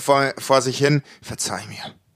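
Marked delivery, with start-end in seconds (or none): 1.2-1.9 very soft, low murmur under the breath. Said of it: "er sagt so ganz leis vor".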